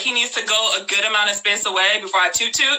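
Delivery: ordinary delivery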